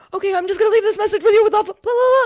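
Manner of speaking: frantic, panicked babble, very high, loud and rushed. Retelling the medium hurrying off: imitating someone talking really quickly. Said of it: "she just starts going really quickly".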